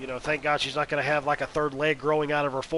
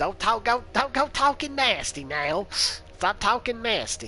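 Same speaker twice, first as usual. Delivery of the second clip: spot-on put-on high, drawn-out woman's voice; 7 semitones higher than usual. Showing off the impression of her that you call gold, do an impression of a woman talking. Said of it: "My impression on, of her was gold... it sounded just like her".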